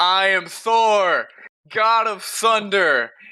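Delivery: put-on battle yell, very high, very slow, drawn-out. Retelling a story about a kid on a toilet: screaming at the top of lungs. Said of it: "he screams at the top of his lungs".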